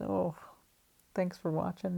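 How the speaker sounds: despairing voice. Signing off a video to viewers after a disappointing end, despairing voice. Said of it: "Notice the despair in my voice".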